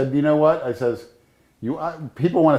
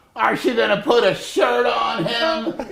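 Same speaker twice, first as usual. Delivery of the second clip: mock very high, very slow, drawn-out old lady shout; 10 semitones higher than usual. Retelling an arrest, the old lady shouting from the neighbors. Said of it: "the old lady shouted out".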